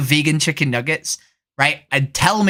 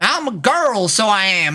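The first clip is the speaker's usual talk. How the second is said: full fake Texas accent, pitched up; 5 semitones higher than usual. Chatting with others while posing as a texan: put-on loud texas accent. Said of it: "I just talk in a really loud Austin, Texas, Texas accent".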